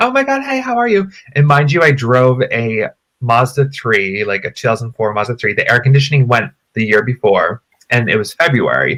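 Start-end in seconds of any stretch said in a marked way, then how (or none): 0.0-1.1 put-on, bubbly, peppy, very high-pitched voice. Retelling how a woman greeted the speaker, imitating a peppy greeting. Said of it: "She was just like all peppy".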